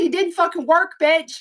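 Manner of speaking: very high, shrill, furious, angry scream. Recalling coming out of surgery and yelling at the nurse, retelling a scream. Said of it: "I screamed at her".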